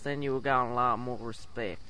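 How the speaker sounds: put-on Southern accent. Panelist advises another speaker about handling a crowd, in a southern accent. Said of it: "talked with a southern accent like this".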